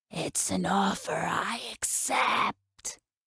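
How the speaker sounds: hoarse, hissing, serpentine snake-like voice. Reading a story, voicing a monster accepting an offer: hoarse serpentine voice. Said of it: "voice hoarse and serpentine".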